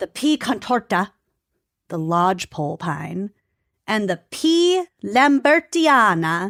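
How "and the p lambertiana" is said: put-on "lambertiana" rolled out slowly, higher, in Italian accent. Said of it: "I don't know why I'm putting an accent on it".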